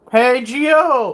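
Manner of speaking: voice breaks, high and loud. Calling out to Gio before push-ups; voice cracking. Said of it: "my voice cracked".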